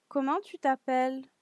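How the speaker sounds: questioning lilt, pitch climbing at t'appelles. Demonstrating a french question for learners, with rising question intonation. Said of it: "my voice uh, raise go up a little bit at the end".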